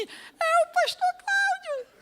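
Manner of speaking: sweet gentle tiny voice, pitched very high. Retelling what a voice said to him: imitating a soft little voice. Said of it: "uma vozinha suave disse assim".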